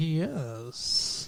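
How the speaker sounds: "yes" said through clenched teeth. Retelling an actress's reply to a proposal: imitating a yes through clenched teeth. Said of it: "clenched teeth, where she, like, doesn't fully open her mouth".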